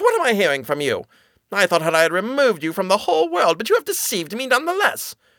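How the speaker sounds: furious sorceress voice with rising pitch. The sorceress confronts Rapunzel after being deceived, an angry sorceress. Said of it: "In her anger".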